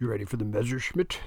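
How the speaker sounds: ordinary delivery, nothing marked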